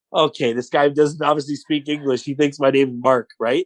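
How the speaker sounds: usual speaking voice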